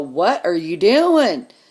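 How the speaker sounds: acted firm, commanding voice, loud and slow. Speaker acts out stepping in when someone kicks an older person: retelling an authoritative voice. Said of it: "I use a really authoritative voice".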